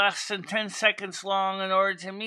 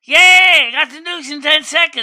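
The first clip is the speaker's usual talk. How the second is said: mocking put-on young kids' voice, higher and louder; 7 semitones higher, 16 dB louder than usual. Mocking how Generation Alpha reacts to short news: mocking imitation of Generation Alpha kids. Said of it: "All the generation Alpha be like".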